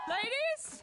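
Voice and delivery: urgent, high, loud shout.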